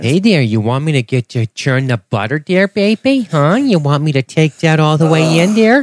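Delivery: put-on Minnesota accent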